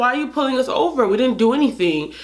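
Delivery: play-acted aggrieved, upset, protesting tone. Retelling a question put to police during a traffic stop: imitating own upset past words. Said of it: "I was upset 'cause I'm like".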